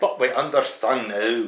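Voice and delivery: put-on Scottish accent, loud. Asked to repeat a politician's line, the speaker says it in a Scottish accent. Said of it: "Can you say that with a Scottish accent?".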